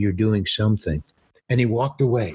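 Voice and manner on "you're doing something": whisper, lower in pitch. Retelling what a director quietly told him: imitating a whisper. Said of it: "he just whispers to me".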